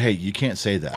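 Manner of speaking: put-on deadpan delivery. Retelling leaning over to a woman as she told a story; retelling a deadpan remark. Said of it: "You said a dead series".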